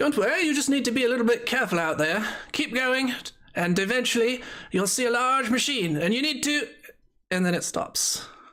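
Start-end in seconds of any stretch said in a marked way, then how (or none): 0.0-6.7 put-on British-accented, recorded-sounding voice. Retelling what a voice told the two listeners, in a British voice. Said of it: "a British voice".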